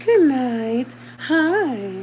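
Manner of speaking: high voice, drawn-out Hi. Showing the voice used when talking to him: Miss Rachel voice. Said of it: "talking in the Miss Rachel voice".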